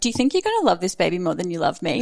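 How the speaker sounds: teasing, sarcastic, sing-song tone. Retelling a question once asked of a partner: imitating own sarcastic question. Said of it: "just being sarcastic".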